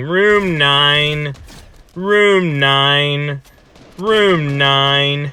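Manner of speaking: very slow, robotic, mechanical intercom announcer voice. Retelling an alarm announcement at the hospital: imitating a mechanical voice. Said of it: "this mechanical voice going".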